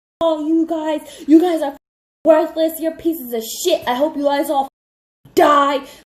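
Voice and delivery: sobbing, shrill, furious, very high, loud screaming. Retelling how a woman got up and yelled at everybody, imitating someone screaming and crying. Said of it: "screaming at all of them, crying".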